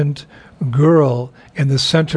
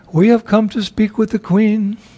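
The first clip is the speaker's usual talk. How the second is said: high, put-on feminine voice; 7 semitones higher than usual. Reading a story, a visitor answers the head guard in a feminine voice. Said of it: "answer in a feminine voice".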